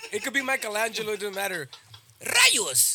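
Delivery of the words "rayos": loud, high Spanish-dubbed cartoon exclamation. Showing how cartoons dubbed into Spanish always sound: imitating Spanish cartoon dub voice. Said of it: "They always sound like that".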